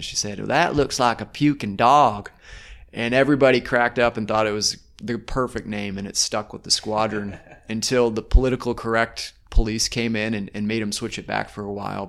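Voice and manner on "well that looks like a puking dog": put-on heavy, laid-on New Orleans accent. Retelling a pilot's wife naming the squadron mascot, thick New Orleans accent. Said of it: "She had a real thick accent".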